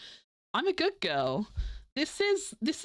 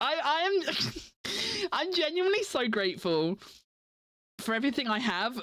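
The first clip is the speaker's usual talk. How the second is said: emotional, choking up, voice breaking, on the verge of tears; 4 semitones higher than usual. Thanking the community for funding everything, choking up. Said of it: "I'm gonna tear up saying it".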